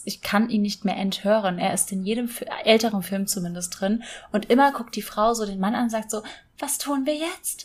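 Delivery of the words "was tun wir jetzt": utterly helpless, soft, slow voice. Mocking how the woman in older films asks the man: mock-helpless voice. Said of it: "so ganz hilflos und so".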